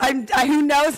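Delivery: fretful, self-mocking voice, high and loud.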